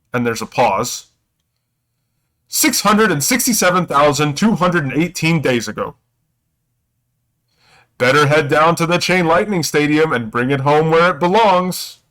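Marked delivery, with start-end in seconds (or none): 2.5-11.9 pitched-up, otherworldly, magical announcer voice calling out. As a character approaches a display case, a voice calls out: shouting magical voice. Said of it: "like a magical voice shouts out".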